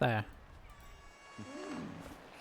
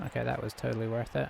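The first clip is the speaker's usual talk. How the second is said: ordinary delivery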